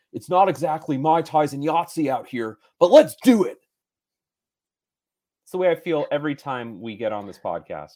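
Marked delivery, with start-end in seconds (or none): 0.1-3.5 loud surfer dude voice, like a movie star. Quoting a movie line as the quote of the day: Nicolas Cage impression. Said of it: "my Nicolas Cage impression".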